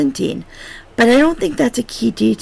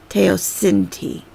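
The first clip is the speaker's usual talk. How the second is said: teosinte with stress on sin; 2 semitones lower than usual. Reading a word from a guide with capitalized syllables: stress on syllable 'sin' in teosinte. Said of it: "I need to put more emphasis on this sin part".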